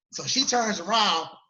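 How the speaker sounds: ordinary delivery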